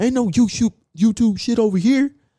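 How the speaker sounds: high, loud, indignant voice.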